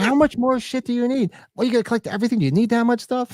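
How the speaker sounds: very high-pitched, exasperated, annoyed nagging. Imitating the wife complaining about collecting more stuff: imitating annoyed wife. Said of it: "She just gets annoyed".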